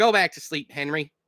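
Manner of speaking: ordinary delivery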